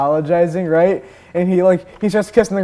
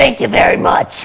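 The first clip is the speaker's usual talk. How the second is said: very raspy voice sounding grateful; 6 semitones higher, 4 dB louder than usual. Retelling how a girl asked if she's okay answered, really raspy thankful voice. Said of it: "really raspy but thankful voice".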